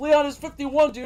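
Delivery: put-on, shrill, very high-pitched shouted outburst. In an imagined game scene, a chased character stops, turns to the ghost and yells. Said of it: "turns to the ghost and yells".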